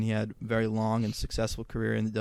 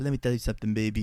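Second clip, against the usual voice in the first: put-on lisping wrestler voice, fast. Showing how a wrestler and promoter with a distinct voice talked, imitating a lisping fast talker. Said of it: "he had this like lisp and this like fast talking".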